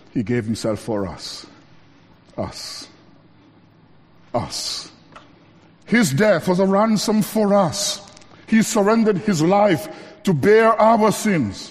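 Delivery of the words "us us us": heavy emphasis on the word us each time. Speaker tells listeners to emphasize one little word, stressing the word us. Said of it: "Let's emphasize this little word".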